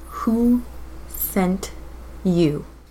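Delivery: eerie, creepy hushed whisper. Speaker's character goes up to the middle-aged man Sanchu; creepy whisper. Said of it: "but I am creepy whispering".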